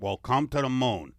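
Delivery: put-on alien voice with Italian accent. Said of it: "I can't get the Italian alien out of my head".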